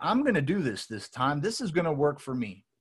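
ordinary delivery

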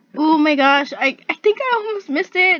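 nervous, worried, anxious voice. A streamer playing a game almost misses something, sounding anxious. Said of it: "I think you can hear my anxiety".

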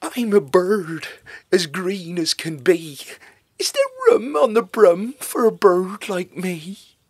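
very loud, high, keen, eager bird voice. Narrating a storybook, the green bird speaks to the witch, eager. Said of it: "then eagerly said".

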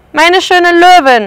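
loud, high-pitched shout. A man spots the lioness hidden behind the lion, shouting. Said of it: "schrie Herr Trapez".

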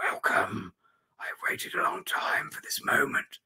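soft, sibilant, hissing whisper. A hooded wraith welcoming the reader before it attacks, in a hissing whisper. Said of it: "says in a hissing whisper".

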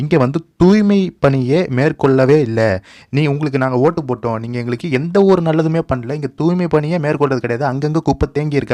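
ordinary delivery

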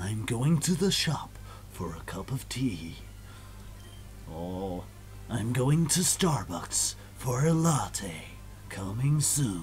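slow, grand movie-trailer announcer voice. Showing how everyday remarks would sound, in a movie announcer voice. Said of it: "that's the voice of the movie announcer".

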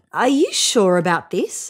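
ordinary talk

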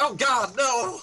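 very high, loud panicked cry, voice shooting up. Reacting to a teammate dying in a game: high-pitched panicked cry. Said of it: "Love how your voice gets so high".

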